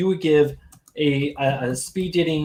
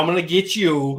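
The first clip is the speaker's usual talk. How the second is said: put-on New York accent, slower. A speaker from new york shows off his accent to the others, in a new york accent. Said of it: "I'm gonna do my New York accent now".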